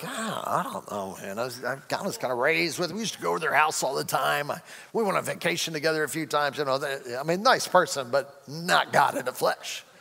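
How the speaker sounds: mock doubtful hedging, halting and stumbling back-and-forth. Imagining learning a cousin is God: imitating a doubtful cousin. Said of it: "You'd be like".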